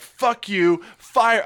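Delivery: mild, high-pitched mock yell, held back. Retelling a past outburst in a packed Denny's at Christmas: retelling a scream. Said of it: "I'm screaming this at the top of my lungs".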